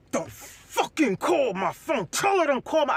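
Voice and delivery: furious, angry rant full of swearing. Retelling what Jimmy said in the mediation room: imitating Jimmy cursing angrily. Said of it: "Jimmy was literally cursing in the mediation room".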